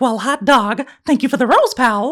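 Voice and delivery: high-pitched, squeaky, cartoonish voice. Thanking someone for a gift, in a Mickey Mouse voice. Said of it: "I was doing the Mickey Mouse voice".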